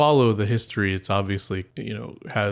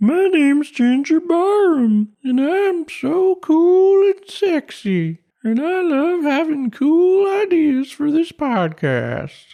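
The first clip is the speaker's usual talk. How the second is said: put-on very high, loud, drawn-out old-timey prospector-grandma voice; 7 dB louder than usual. Doing a mock impression of a co-host named Ginger: Ginger impression. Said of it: "flawless impersonation of Ginger".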